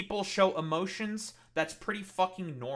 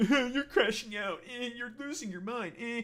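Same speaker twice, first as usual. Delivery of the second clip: mock chattering voice, higher; 4 semitones higher than usual. Retelling what chat keeps saying about him: mocking imitation of chatters. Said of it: "And now you're just saying, like".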